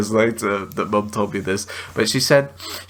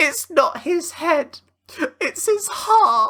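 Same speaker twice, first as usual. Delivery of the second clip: put-on very high, childlike small-boy voice. Retelling something they said as a child, in a little boy voice. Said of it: "in my little boy voice".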